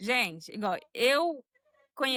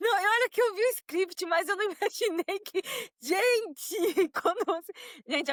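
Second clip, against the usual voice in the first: high, nervous laughter through the words; 8 semitones higher than usual. A woman answers the host's question, laughing nervously while talking. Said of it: "Ela tá rindo de nervoso".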